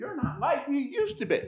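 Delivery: high voice, close to tears, almost crying.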